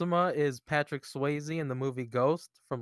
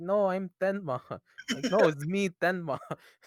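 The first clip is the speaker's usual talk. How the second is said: put-on Mexican accent, pitched up; 5 semitones higher than usual. Retelling what a girl dressed as Tenma said, imitating Laura's Mexican accent. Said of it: "in her Mexican Mexican accent".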